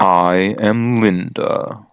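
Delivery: manly, masculine voice. Introducing a half-orc character to the party, manly voice. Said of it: "That just doesn't go right with the manly voice".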